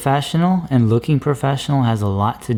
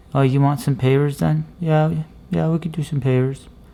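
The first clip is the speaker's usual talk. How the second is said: mumbled, unclear words running together; 2 semitones higher than usual. Showing how not to talk while urging clear enunciation, mumbling. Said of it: "Don't be talking like this".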